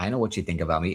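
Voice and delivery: put-on New York accent. Describing an actress's movie role, the speaker quotes her, New York accent. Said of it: "she would do the uh the New York accent".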